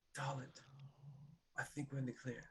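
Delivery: quiet, hushed whisper under the breath. Speaking in character while hiding, unnoticed by others: whispering. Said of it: "I know you're whispering".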